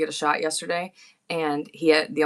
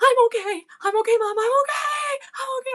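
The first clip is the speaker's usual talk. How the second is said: put-on child screaming, very high-pitched and drawn-out. Retelling a child's visit to the pediatrician, imitating a screaming child. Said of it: "Like he's just screaming".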